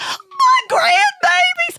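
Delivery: very high, tearful, sobbing wail. Retelling how a mother reacted to eggs: imitating a mother crying. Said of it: "And the mom's crying, going".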